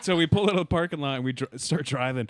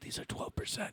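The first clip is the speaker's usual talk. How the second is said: barely audible, very quiet, breathy whisper; 8 semitones higher, 13 dB quieter than usual. Retelling what another man said about his drinks, retelling a whisper. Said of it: "why are you whispering?".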